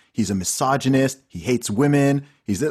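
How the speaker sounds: normal talking voice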